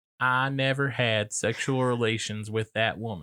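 mild put-on Arkansas accent. Discussing a classic political sex scandal, quoting in a mild Bill Clinton Arkansas accent. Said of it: "That's not a bad Arkansas accent".

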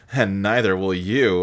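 very low, evil villain voice. Retelling a line from a movie scene: Fiona as an evil villain. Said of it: "like an evil villain".

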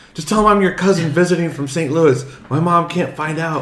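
mock-panicked, acted-out panicked voice. Speaker reenacts turning to Grant, retelling a panicked plea. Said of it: "I am freaking out".

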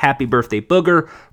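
usual speaking voice

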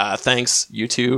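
put-on dry, flat, expressionless deadpan delivery. Retelling a character's answer to being called beautiful: imitating a deadpan reply. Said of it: "deadpan says".

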